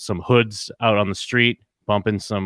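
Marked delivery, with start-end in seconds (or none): none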